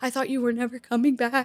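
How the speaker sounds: imitated weeping, mock-tearful voice. Retelling returning to a shivering woman in the tent, imitating someone weeping. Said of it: "she's weeping because she's like".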